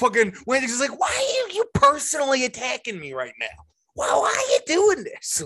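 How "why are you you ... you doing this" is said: animated delivery with big swooping pitch swings. Retelling a scene where the cop confronts two men: Wayne Jenkins impression. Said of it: "this is honestly where my impression comes from".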